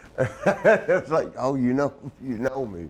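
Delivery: ordinary delivery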